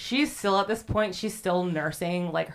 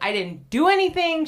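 mock, very high, very loud, pissed-off outburst; 11 semitones higher, 6 dB louder than usual. Retelling a story, voicing a woman who insists she did nothing, acting out a pissed-off woman. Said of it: "so she is pissed".

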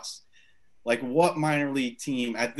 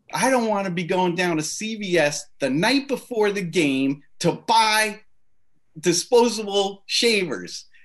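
play-acted, high screaming at the top of the lungs; 7 semitones higher, 6 dB louder than usual. Retelling what a man screamed while no one else in the room laughed, imitating his top-of-the-lungs scream. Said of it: "screaming top of his lungs".

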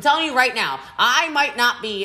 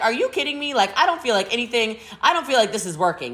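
plain

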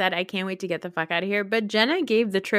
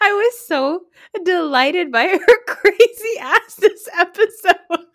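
very high, loud cackling through the words; 9 semitones higher, 8 dB louder than usual. Talking about a cast member from this episode, cackling laugh while talking. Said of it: "I sound like a cackling hag".

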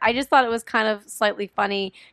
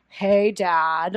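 play-acted, corny, hammed-up, badly acted, cheesy delivery; 3 semitones lower than usual. Mocking how the dad greets his son: imitating a cheesy greeting. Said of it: "he says it so cheesy".

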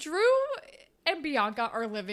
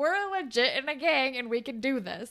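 usual speaking voice

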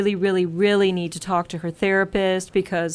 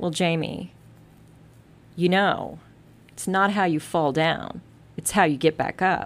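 put-on smug, self-satisfied, pleased-with-herself tone. Speaker retells a woman's reply to him, as a mock-smug retort. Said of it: "she very smugly said to me".

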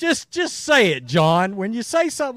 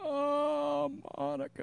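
very soft, hushed, creaky "oh" with stretched vowel; 4 semitones higher, 14 dB quieter than usual. Doing the impression again: Bill Clinton voice. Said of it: "Bill Clinton?".

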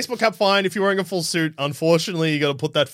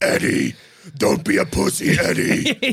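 put-on monster voice, higher pitch; 7 semitones higher than usual. Imitating Tom Hardy's Venom egging Eddie on: Tom Hardy's Venom voice. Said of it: "Tom Hardy's Venom being like".

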